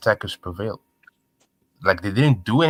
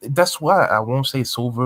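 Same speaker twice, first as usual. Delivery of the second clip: ordinary talk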